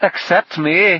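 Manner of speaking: high, loud, chirpy little sound. A man cuts in while the group is being addressed, chirping. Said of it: "chirped Sweet William".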